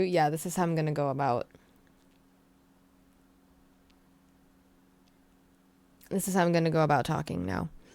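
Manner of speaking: low-pitched, fake British accent. Asked whether this is a British accent debut, answering in a fake British accent. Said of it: "Is this your British accent debut?".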